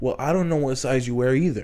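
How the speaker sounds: ordinary delivery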